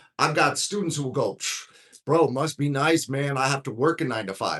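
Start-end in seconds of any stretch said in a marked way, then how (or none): 2.1-4.6 mock sarcastic, jabbing tone. Quoting students who tease the speaker about asking for help, imitating sarcastic students. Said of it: "So sarcastically".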